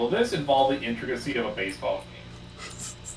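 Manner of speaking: normal talking voice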